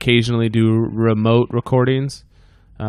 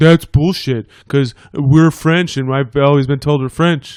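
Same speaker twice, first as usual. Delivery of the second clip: put-on elderly grandma way of talking; 4 semitones higher, 4 dB louder than usual. Speaker quotes grandma's reaction to their heritage results; imitating grandma's voice. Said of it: "I'm doing my grandma's voice".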